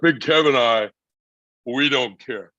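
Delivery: very slow, heavy, deliberate words. Retelling a wrestler's promo line: Scott Hall voice. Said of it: "he says".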